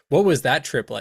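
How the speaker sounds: normal talking voice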